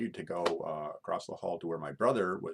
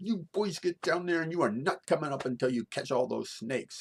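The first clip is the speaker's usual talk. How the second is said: shrill, very high, loud hollering yell; 10 semitones higher, 5 dB louder than usual. Retelling her ordering the boys down to the basement: retelling a woman's yell. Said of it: "And she's yelling".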